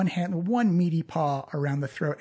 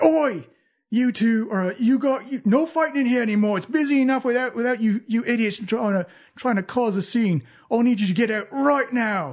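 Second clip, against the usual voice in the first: scolding tone with voice pitched up; 6 semitones higher, 4 dB louder than usual. Voicing the barkeep breaking up a fight: Durnan's voice. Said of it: "you see Durnan from behind the bar say".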